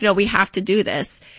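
ordinary delivery

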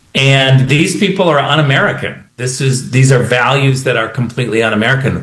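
normal talking voice

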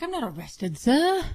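put-on dazed, out-of-it voice drifting into British accent. Retelling what the person in the clip said, imitating a British accent. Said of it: "slipping in and out of the British accent".

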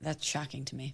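speaking in a whisper. Reacting to someone who has never had caviar, whispering. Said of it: "Why are you whispering?".

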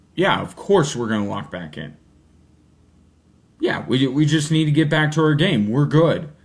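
matter-of-fact, unbothered, assured tone.

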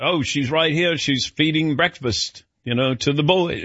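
poor English accent.

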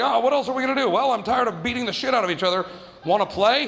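plain

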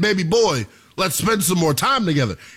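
ordinary talk

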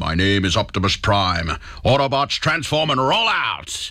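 big deep put-on robot voice. Reporting Peter Cullen's death on the news, doing his big deep Optimus Prime voice. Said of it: "famous for that big, deep voice".

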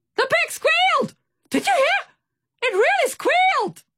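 excited shrieking shout, shrill and very high. Reading a character calling across the water in a story, excited shout. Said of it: "He shouted excitedly".

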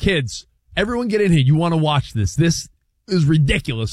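ordinary delivery

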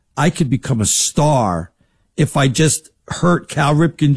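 ordinary delivery

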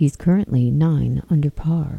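low golf broadcast commentator voice. Showing how the British Open leader gets announced, in a golf commentator voice. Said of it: "Look at you with the golf voice".

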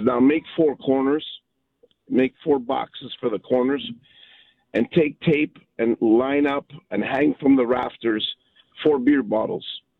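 ordinary talk

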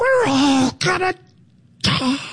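dire, proclaiming doomsday preacher voice. Describing coming back to all the AI uproar, doing a Reverend Kane impression. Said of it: "it's like Reverend Cain".

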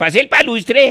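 fake Russian accent. Showing how a wool hat makes you talk like a Russian, fake Russian accent. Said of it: "queda hablando como ruso".

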